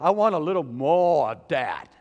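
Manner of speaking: very loud, slow, put-on South Philly accent. Recalling how locals near south jersey talked, south philly accent. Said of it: "in my best South Philly accent".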